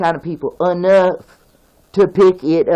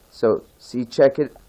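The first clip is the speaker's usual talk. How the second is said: plain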